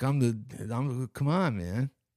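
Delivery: slow, drawn-out, doofy voice. Imitating a friend's dog, said to have the doofiest voice: Jeff Bridges Lebowski voice. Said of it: "he sounded like, uh, like Jeff Bridges from the, uh, Lebowski".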